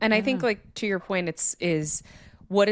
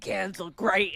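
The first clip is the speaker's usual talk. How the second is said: put-on thick New York accent, Queens style. Retelling what a husband said to his bride on their wedding day, thick Queens New York accent. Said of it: "he's like Queens, like New York thick accent".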